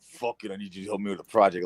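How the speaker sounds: blunt, heavy, bossy, low, beefy, aggressive voice. Retelling how a friend demanded help with a project: imitating Franny's beefy aggressive voice. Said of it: "Why do I sound like a beefy man?".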